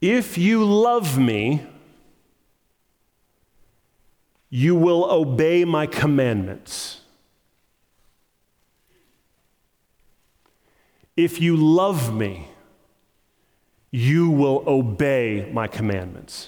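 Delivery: slow, unhurried, deliberate word-by-word reading. Reading a verse aloud to listeners, read slowly. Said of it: "I'm going to read it slow".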